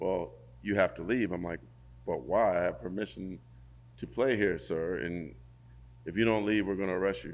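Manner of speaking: ordinary talk, nothing marked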